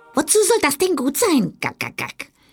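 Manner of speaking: snooty, haughty, very high hen-like voice. Narrator reads the hen answering the duckling in a story; haughty. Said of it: "bemerkte die Henne hochnäsig".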